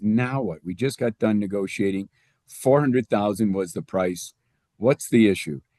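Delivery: ordinary talk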